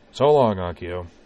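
casual, offhand. Corwin, walking away, says goodbye to Akio over his shoulder; offhanded tone. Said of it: "he said over his shoulder in an offhanded tone".

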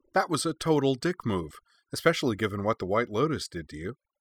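ordinary delivery, nothing marked

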